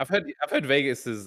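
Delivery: voice breaking and cracking up high mid-phrase. Chatting about Vegas, the speaker's voice suddenly cracks: voice cracking. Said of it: "a voice crack".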